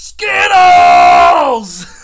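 high, loud yell.

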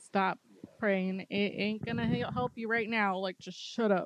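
plain

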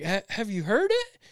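high-pitched holler, called out loudly. Retelling calling back to someone on the sidewalk: retelling a holler. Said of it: "I kinda hollered back at him".

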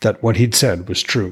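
plain reading voice

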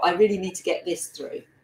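usual speaking voice

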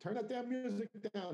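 put-on slight Irish accent, pitched very high. Quoting a woman who put up with the loud music, put-on Irish accent. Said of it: "in her Irish little accent".

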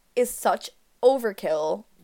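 ordinary talk

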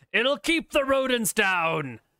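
put-on shouting. Voicing Wiley answering a yell from another room, yelling back. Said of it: "Wiley will yell back at you".

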